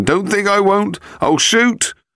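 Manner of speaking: desperate, very high, drawn-out pleading shout. Leo shouts that he will shoot, desperate pleading shout. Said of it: "a pleading tone adding to his desperation".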